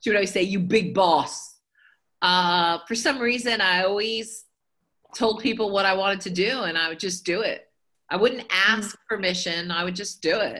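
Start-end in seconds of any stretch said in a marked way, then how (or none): 0.4-1.5 put-on mimicked thick, heavy Polish accent. Mimicking a grandmother calling her grandchild, in a heavy polish accent. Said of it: "she spoke with a heavy Polish accent, so I'm going to try to mock it or mimic it".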